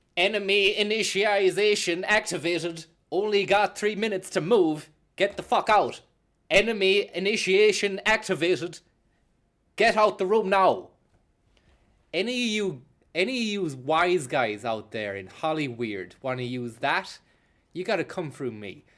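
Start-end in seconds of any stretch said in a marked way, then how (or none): 0.2-10.9 put-on robot voice, much higher and louder. Offering a new character to comic studios, in the Robo Francis robot voice. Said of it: "This is the new robot voice".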